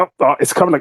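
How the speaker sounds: put-on taunting voice. Retelling taunting strangers during a Mario Party game: retelling a taunt. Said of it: "start doing the taunts noises".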